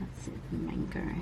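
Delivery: soft, unvoiced whisper.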